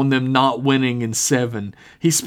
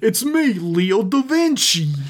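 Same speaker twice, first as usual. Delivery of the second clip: higher-pitched, dim-sounding Brooklyn character voice; 8 semitones higher than usual. Recreating a video host's introduction, in a Leo da Vinci Brooklyn voice. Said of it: "this like Brooklyn accent stupid character".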